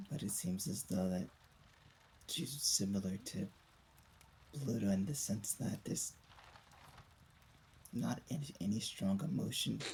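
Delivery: whispering in put-on voice. Speaking in character privately to another character: whispering in character. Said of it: "kinda say in a whisper".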